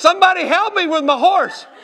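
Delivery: put-on, yelled, screaming pleading cry. Retelling a runaway-horse mishap, retelling screaming for help. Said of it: "just screaming".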